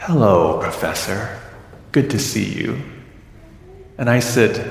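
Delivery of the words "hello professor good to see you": soft, hushed stage whisper. Retelling a visit to a dying former colleague: imitating a half-whisper. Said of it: "he whispered".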